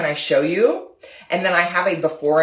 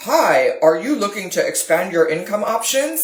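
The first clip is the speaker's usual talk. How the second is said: stiff, mechanical robot voice. Showing how not to pitch people: robotic salesperson voice. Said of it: "Mister Robot".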